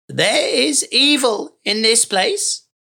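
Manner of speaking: croaked, croaky voice. Narrating, voicing the shamaness as she speaks to the Count: croaking. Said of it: "she croaked".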